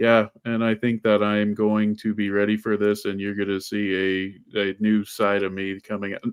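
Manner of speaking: flat, level monotone, "see" drawn out. Describing how she talks about the fight, imitating her flat monotone. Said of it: "she's kind of monotone".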